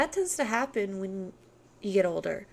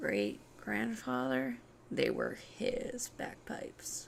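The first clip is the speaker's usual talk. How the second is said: put-on hushed, breathy, whispered goth girl voice; 2 semitones higher, 9 dB quieter than usual. A speaker does a bit the listener calls a good impression: goth girl impression. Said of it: "That is actually a good impression of uh, the goth girl".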